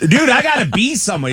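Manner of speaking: very high-pitched, raw screaming yell. Retelling yelling at a late ride driver: retelling own screaming. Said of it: "screaming at these dudes".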